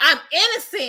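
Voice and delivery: high-pitched yelling. Retelling a sentenced man being taken out of court: imitating Jussie yelling. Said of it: "he's yelling".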